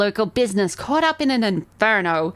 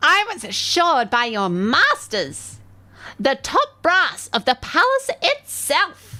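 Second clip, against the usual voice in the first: piercing, shrill, rising voice; 6 semitones higher than usual. A game master voices a woman addressing a player, in a shrill voice. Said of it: "Shrill voice".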